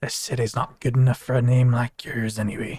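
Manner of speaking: said low, as an aside. Leaning over to say a line to pi: low voice under breath. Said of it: "just kinda a little low under my breath".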